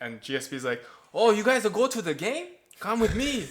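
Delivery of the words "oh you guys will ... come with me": bad, very high, loud put-on Quebecois accent.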